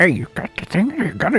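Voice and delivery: sneaky, shifty mumbling. Voicing a shopkeeper heard behind the counter: mumbling like a drug deal. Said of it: "mumbling like it's a drug deal".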